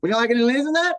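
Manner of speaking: put-on very high, broadest rough Australian bogan accent. Quoting the woman taking an enchilada order, imitating a broad bogan accent. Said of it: "in like the most bogan accent".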